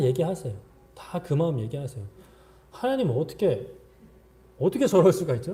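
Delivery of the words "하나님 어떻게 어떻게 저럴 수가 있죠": high, loud, indignant outcry full of outrage. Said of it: "라고 그냥 다 얘기하십시오".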